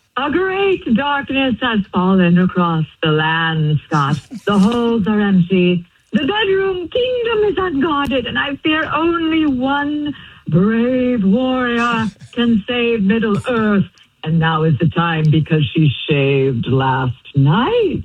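grand, epic fantasy movie narrator voice. Calling Scott home from work, Lord of the Rings voice. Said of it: "You're doing Lord of the Rings".

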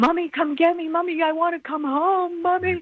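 put-on high, screaming, sobbing, hysterical crying child's voice. Retelling a little boy's phone call to his mother, imitating hysterical crying. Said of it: "This little boy is hysterical".

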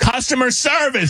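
screaming. Retelling screaming at an automated airline phone line: imitating screaming. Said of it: "I'm just screaming at this thing".

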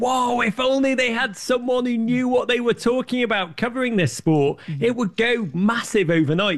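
mock shrill screaming. Speaker recalls reacting to football coverage on their television: retelling a scream at the TV. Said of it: "I screamed at the television".

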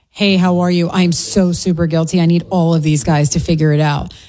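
ordinary talk

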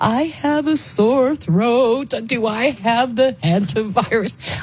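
weepy, high, very slow, drawn-out tearful crying. Retelling a woman crying in her car at midnight: imitating a woman crying. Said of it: "she's in her car and she's crying".

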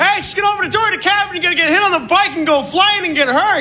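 very high, frantic, rambling delivery.

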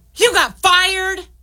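angry voice, pitched way up, very high. Demonstrating tones in a group exercise, saying the example line in a mad tone. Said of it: "And mad".

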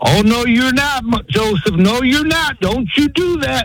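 very high, scolding shout. Retelling how a woman watching a father about to whip his son yelled at the screen. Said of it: "she started yelling at the screen".

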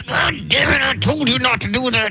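very high, angry Texas drawl through gritted teeth. Describing their dad when he got mad, imitating his gritted-teeth southern texas drawl. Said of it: "he had a very Southern Texas drawl".

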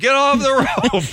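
mock very high, furious, angry shouting yell. Recalling how the lifeguards shouted about the rope: imitating lifeguards' angry yell. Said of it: "The lifeguards were so angry yelling at you".

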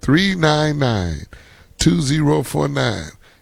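spoken slowly, unhurried. A speaker repeats a phone number for listeners, slow. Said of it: "I'm going to say it slow".

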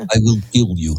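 put-on Russian or Ukrainian type accent. Speaker demonstrating a favorite foreign accent, in a Russian Ukrainian type accent. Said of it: "That Russian, Ukrainian type accent".

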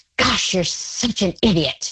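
put-on angry, scolding tone. Describing a parent who messes up and scolds themselves, imitating an angry voice. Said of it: "says in an angry voice".

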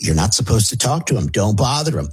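ordinary talk, nothing marked

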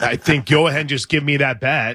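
ordinary delivery

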